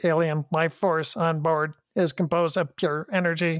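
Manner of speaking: synthetic, robotic starship computer announcement voice. Retelling a scene where Spock asks the computer for a report: impression of the ship's computer. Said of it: "Impression of the computer".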